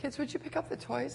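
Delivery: gentle, easy, very quiet, calm and nice voice. Speaker recounts asking the kids a second time to pick up toys, retelling a calm, nice request. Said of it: "So very calmly, nicely".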